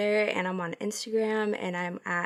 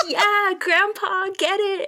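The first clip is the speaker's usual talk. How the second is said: put-on high, slow, cheering child voice. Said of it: "a child with turkey legs, It's like".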